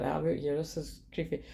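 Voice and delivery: ordinary talk, nothing marked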